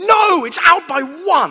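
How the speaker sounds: slow, loud, anguished, despairing shout.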